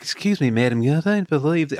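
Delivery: put-on polite, courtly, courteous Southern gentleman's accent. Describing a courteous character's voice, quoting him in a southern gentleman accent. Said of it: "very much like a southern gentleman".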